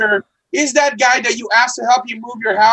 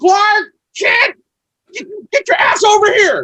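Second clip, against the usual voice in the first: put-on shrill, very high, angry yell; 10 semitones higher, 3 dB louder than usual. Imagining Martha Kent coming out to scold her son Clark: imitating Martha Kent yelling. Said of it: "start yelling at her son".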